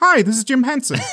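very high pitch, slightly happier, cheerier voice. Show listeners one of the episode's many voices, a slightly happier Jim Henson voice. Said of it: "a slightly happier George Lucas is Jim Henson".

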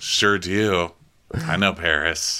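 drawn-out, slow, measured, deliberate delivery. Retelling the way a man said a line: imitating Innes. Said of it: "The way he said that, he's like".

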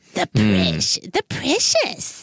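put-on baby-talk voice, low and swooping. Showing the voice practiced since rewatching Lord of the Rings, Gollum voice. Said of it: "I've been working on my Gollum voice".

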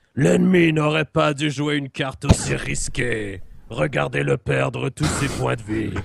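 rough, creaky dragon voice speaking French. Asked what a french dragon sounds like, performing one, french dragon voice. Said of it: "I could see a French dragon sounding like that".

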